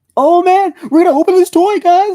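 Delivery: high, loud, goofy voice. Imitating Puppet Steve opening a toy: wacky Puppet Steve voice. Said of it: "Puppet Steve is just his normal voice".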